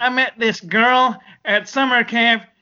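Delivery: put-on voice, strongly and heavily nasal. Imitating a guy who had a really nasally voice, nasal put-on voice. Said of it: "he had this really nasally voice, man. So he was like".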